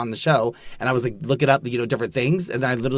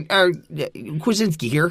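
put-on Michigan accent, much higher pitch; 4 semitones higher than usual. Joking that names like Kuczynski mean Michigan, in a Michigan accent impression. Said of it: "Was that your impression of somebody from Michigan?".

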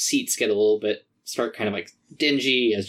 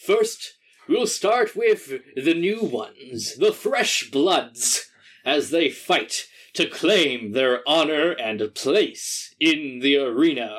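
big wood elf arena announcer voice, higher; 5 semitones higher than usual. Voicing an announcer welcoming the crowd to the arena: big wood elf arena announcer. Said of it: "a very big wood elf man comes out to the center of the arena and says".

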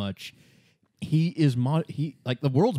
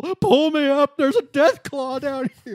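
acted very high, loud shriek, sounding distant; 14 semitones higher, 5 dB louder than usual. Telling a story, acting out a man left down a hole: imitating someone screaming. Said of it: "he's screaming up from the hole".

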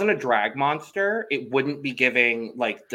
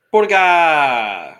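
booming, thrilled, very loud, drawn-out enthusiastic voice; 4 semitones higher, 9 dB louder than usual. Calling out 'burga' during a ratings round: enthusiastic 'burga'. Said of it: "That is the most enthusiastically I've ever said Burga".

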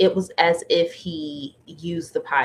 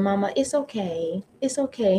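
put-on sweet, cute, small toddler voice; 4 semitones higher than usual. A mother retells her young son forgiving her, cute little toddler voice. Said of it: "His cute little toddler voice".

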